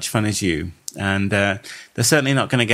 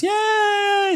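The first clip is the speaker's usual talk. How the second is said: put-on puppet voice, much higher. Cheering about finally passing 500 Facebook fans, in a Muppet impression. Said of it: "That was another Muppet impression".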